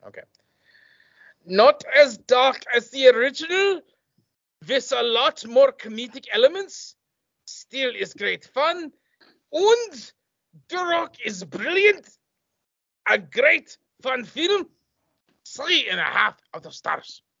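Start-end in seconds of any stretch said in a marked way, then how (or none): 1.4-17.2 put-on, deliberate, slow German accent, pitched up. Reading out a listener's film review aloud in a put-on German accent. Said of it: "I'm doing a German accent".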